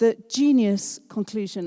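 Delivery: ordinary delivery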